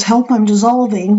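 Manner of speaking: ordinary talk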